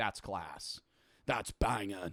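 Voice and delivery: mock fifty-year-old man voice. Imitating a fifty-year-old man watching a comedy special: imitating a fifty-year-old man. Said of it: "a fifty-year-old man watching, they'd be like".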